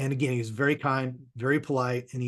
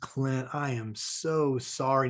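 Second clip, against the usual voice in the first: very slow, gentle, kind, soft-spoken grandfatherly voice. Retelling Howard's apology to Clint, imitating Howard's gentle voice. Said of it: "a very gentle, grandfatherly kind of voice".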